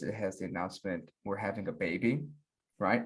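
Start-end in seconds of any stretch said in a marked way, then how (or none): none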